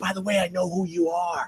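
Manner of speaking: soft, confiding half-whisper. Telling how a man finally admitted recognizing him after two years, retelling a half-whisper. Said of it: "he whispers to me".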